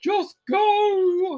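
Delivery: frantic hysterical delivery, very high and drawn out. Retelling a scene where Ace is hysterical: imitating Ace being hysterical. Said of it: "Ace is hysterical".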